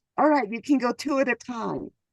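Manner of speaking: usual speaking voice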